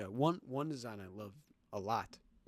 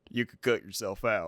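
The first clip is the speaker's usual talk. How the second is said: put-on southern vigilante voice, louder; 8 dB louder than usual. Retelling a scene from the graphic novel, quoting Rorschach: southern-sounding Rorschach impression. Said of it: "it sounds southern".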